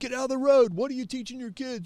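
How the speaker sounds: mock screaming, high-pitched. Retelling a man who opened his car door to scream at him: imitating a man screaming. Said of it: "he starts screaming at him".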